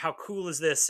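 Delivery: plain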